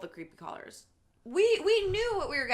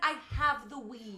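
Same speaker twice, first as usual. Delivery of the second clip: usual speaking voice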